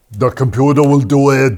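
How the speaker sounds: put-on Austrian accent. Asked to do Arnold Schwarzenegger, off the cuff: Arnold Schwarzenegger impression. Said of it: "Can you do Arnold Schwarzenegger?".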